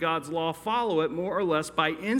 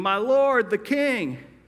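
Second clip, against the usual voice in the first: mock humble call, raised and drawn-out; 5 semitones higher, 5 dB louder than usual. Retelling a scene where someone calls out to the king: retelling someone yelling. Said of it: "he hears someone yelling".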